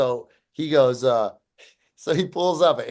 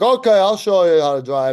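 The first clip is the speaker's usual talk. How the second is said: mock barking drill sergeant voice, higher and louder; 5 semitones higher, 6 dB louder than usual. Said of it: "Why does your dad always sound like a drill sergeant?".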